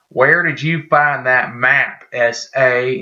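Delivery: put-on strong Southern accent, laid on thick. Retelling a man at a shopping mall confronting a stranger, in a heavy southern accent. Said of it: "with like a really southern accent".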